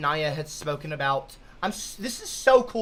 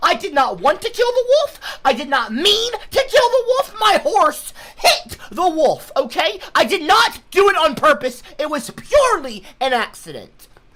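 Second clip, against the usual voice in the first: worked-up, intense, exasperated, frustrated insistence; 9 semitones higher, 6 dB louder than usual. Answering people who won't let it go, intense and frustrated. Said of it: "I'm sorry if I seem a little intense right now".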